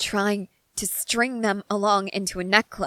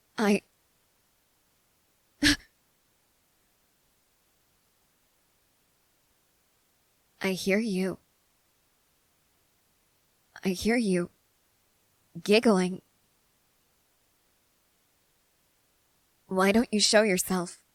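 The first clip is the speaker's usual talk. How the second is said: frustrated, menacing, frightening tone. A character calls out to someone hidden who is giggling, frustrated and frightening. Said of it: "I know I sound frustrated and frightening".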